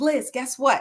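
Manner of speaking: mock excitement, put-on. Retelling a man rushing over after a conference, imitating someone excited. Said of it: "he's all excited".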